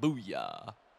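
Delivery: bass-heavy, real deep call, voice dropped low. Trying to recall something, saying booyah in a very deep voice. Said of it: "It's like a real, like, deep voice. Like".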